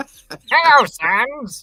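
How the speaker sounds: shrill, booming character voice, very high and loud. Joking about voicing every character, greeting Sans in a Papyrus voice. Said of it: "Every character I voice now is, is fucking Papyrus".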